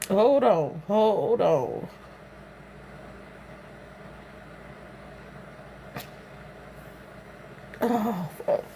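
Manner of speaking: crying while talking. Recounting a call from a cousin, crying while talking. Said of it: "I ain't finna keep crying".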